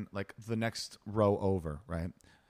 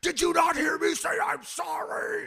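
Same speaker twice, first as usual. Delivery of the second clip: mock shrill, very high-pitched, drawn-out screaming; 5 dB louder than usual. Retelling a roadside argument between two men, retelling someone screaming. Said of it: "started screaming at the top of his lungs".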